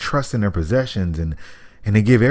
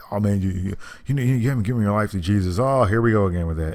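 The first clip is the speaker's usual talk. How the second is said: put-on corny-sounding tone. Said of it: "People make it sound corny".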